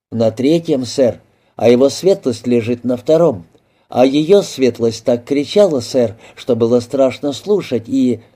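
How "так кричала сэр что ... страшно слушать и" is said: plain reading voice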